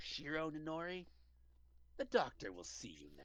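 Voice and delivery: hushed, very quiet, menacing, sinister voice. Narrating the scene, voice an unseen figure calling a sleeping character in a waiting room: sinister calling voice. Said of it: "You hear a sinister voice call".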